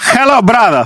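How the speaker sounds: put-on Russian accent. Trying out an accent while the others listen: Russian-sounding accent. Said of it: "that's Russian".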